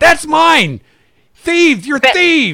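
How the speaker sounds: very high, shrill, loud, frantic freak-out. Voicing a man whose necklace the players just took; freaking out. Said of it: "now he's freaking out because you took his necklace".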